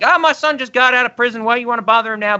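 high, upset, distressed mother's voice. Retelling a film scene where the mother answers the door: imitating an upset mother. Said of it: "She's all upset".

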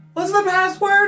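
very high, timid, sheepish yell, loud. Someone in hiding calls out to whoever arrives, a sheepish voice yelling. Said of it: "a sheepish voice just yell".

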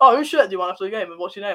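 ordinary delivery

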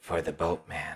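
low, hushed half-whisper. A creature outside a cell places a coin in a player's hand, half-whispering.

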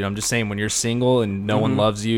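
ordinary talk, nothing marked

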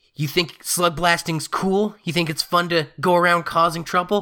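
stern grilling tone. Voicing what she is about to say, scared-straight lecture. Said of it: "go full scared straight program and be like".

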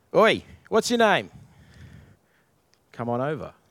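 mild calling out, voice swooping and swinging. Retelling how Boaz calls a man over at the town gate: imitating Boaz yelling. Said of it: "Boaz basically yells out".

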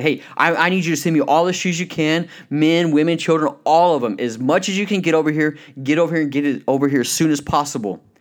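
mock-excited, eager salesman voice. Telling a story, voicing a shoe salesman calling the corporate office; imitating an excited salesman. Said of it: "gets all excited".

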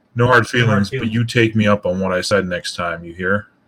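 grave, firm, stern voice. Voicing a character who stares at another and warns him: stern in-character warning. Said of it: "With a very stern glance".

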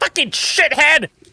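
very high, shrill, furious angry outcry. Voicing the Archdruid struck by a lightning bolt: crying out in anger. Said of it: "She cries out".

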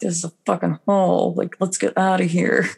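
conspiratorial, high, half-whispered stage whisper. Describing location scouting, acting out a secret half-whisper to the production designer. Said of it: "secretly you're whispering to your production designer".

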